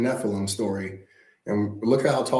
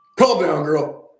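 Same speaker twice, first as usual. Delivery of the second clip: firm, loud, emphatic voice, pitched up; 5 semitones higher, 5 dB louder than usual. Telling another speaker to calm down after being asked to mean it: firm calm-down order said like you mean it. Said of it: "You gotta say it like you mean it".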